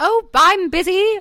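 very high-pitched fake British accent. Quoting the speaker's parents in a put-on british accent. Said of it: "I love your British accent".

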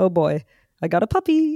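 acted joyful, delighted, sing-song, drawn-out voice. Retelling a cheerful sleep talk recording: imitating own cheerful sleep talk. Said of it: "And I say it like that".

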